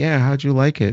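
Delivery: put-on loud, high-pitched, carrying old woman's chatter. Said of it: "they're talking so loud".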